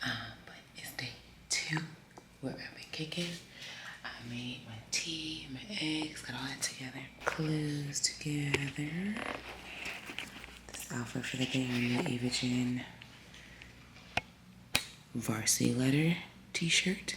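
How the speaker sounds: speaking in a whisper. Showing breakfast and outfit while an uncle sleeps: whispering. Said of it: "I'm gonna whisper 'cause my uncle's still asleep".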